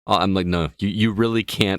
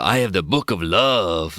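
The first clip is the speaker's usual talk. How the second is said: put-on Latin American accent.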